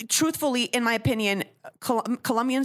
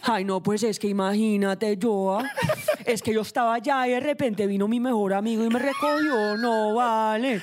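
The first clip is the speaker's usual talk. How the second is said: Medellín Colombian accent with sad lilt. Speaker shows off the Colombian accent they love, Medellin Colombian accent. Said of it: "I love the Colombian accent, specifically the from Medellin".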